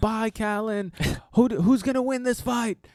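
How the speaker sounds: high-pitched yell, called out over the shoulder. Describing Bisping leaving in a car with the window down, retelling Bisping's yell. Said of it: "you just see him yell out".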